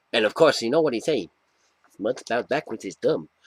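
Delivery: bad, terrible put-on cartoon rabbit voice. Reading a comic cover line aloud: worst Bugs Bunny impersonation. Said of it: "the worst Bugs Bunny impersonation".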